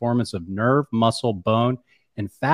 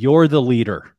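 loud, firm, stern, emphatic delivery; 6 dB louder than usual. Retelling what a colleague told him in a parking lot: imitating someone speaking firmly and sternly. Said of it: "very, very firmly and sternly".

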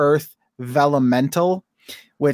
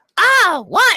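ugly, very high, loud, horrible put-on toad voice; 5 dB louder than usual. A father doing the voices while reading to his son, in a horrible toad voice. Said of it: "that horrible voice".

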